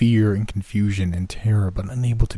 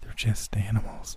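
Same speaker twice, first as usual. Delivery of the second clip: whispered, much quieter; 8 dB quieter than usual. Narrator, watching her study the people nearby, speaks to her: whispered. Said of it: "I whispered".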